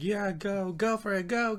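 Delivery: high-pitched crowd-style cheering.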